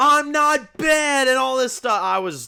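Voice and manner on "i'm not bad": high-pitched, loud shouting and yelling. Mocking how a show character yells her lines: imitating Ellie yelling. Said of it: "yelling, like".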